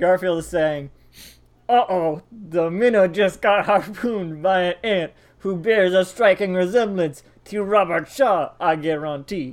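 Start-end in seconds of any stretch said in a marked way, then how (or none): 1.7-9.5 put-on slow vampire voice with Cajun accent. Reading Garfield's line from a comic panel aloud, in Cajun Dracula voice. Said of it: "because I want to read it in Cajun Dracula".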